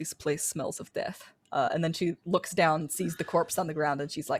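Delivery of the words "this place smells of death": hushed, whispered mutter to oneself. A storyteller voices a humanoid character who is muttering to herself. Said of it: "she sort of mutters to herself".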